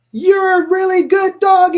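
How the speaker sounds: very high, loud, sweet praising tone.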